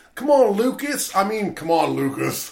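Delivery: put-on loud, dragged-out Aussie accent. Imitating an actor's accent slipping during a movie: Anthony LaPaglia Australian accent. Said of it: "his Australian accent comes out several times".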